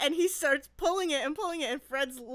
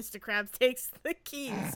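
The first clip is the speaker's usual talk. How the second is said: ordinary delivery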